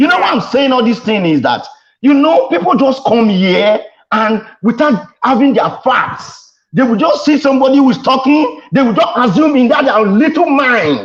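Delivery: worked-up, agitated outburst. Arguing a point to another speaker on a show: worked up, heated. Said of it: "let me calm down".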